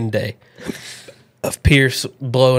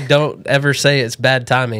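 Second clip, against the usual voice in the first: usual speaking voice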